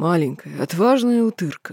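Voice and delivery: pleased, satisfied, contented growl. Reading a story aloud, voicing an orc father praising his little one, pleased growl. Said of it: "И папашка довольно прорычал".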